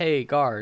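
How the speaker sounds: plain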